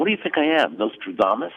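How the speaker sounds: rude, nasty, cutting tone. Recounting a host's reply to a question about wait time: imitating a nasty tone. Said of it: "In this nasty tone".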